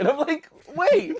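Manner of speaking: high, laughing disbelief.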